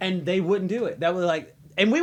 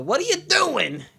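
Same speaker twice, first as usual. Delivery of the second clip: put-on New York Midwestern accent, pitched up; 7 semitones higher than usual. Teasing a friend about how he talks: imitating a New York Midwestern accent. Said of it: "a New York Midwestern accent".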